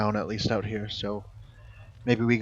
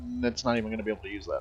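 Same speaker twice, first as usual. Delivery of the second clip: soft, fast, dismissive, tossed off under the breath. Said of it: "So I'm just like".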